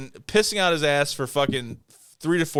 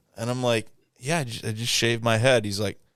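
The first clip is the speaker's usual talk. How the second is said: usual speaking voice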